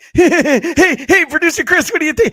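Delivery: wild manic hollering, very high and very loud. Telling which impression is your favorite, show it by imitating Chad's manic impression. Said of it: "my favorite is Chad's because it's just so manic".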